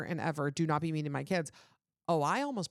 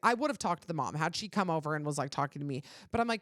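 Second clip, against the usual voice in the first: ordinary talk, nothing marked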